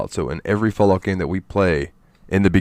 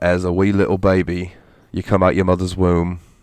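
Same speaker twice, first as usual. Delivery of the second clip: put-on British accent. Describing the start of a game, British accent. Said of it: "I don't know why I did that in a British accent".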